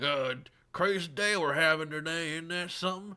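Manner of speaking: put-on heavy, thick rural country accent, pitched high. Retelling how farmer customers at a rural convenience store talked: thick country accent. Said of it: "super thick country accents".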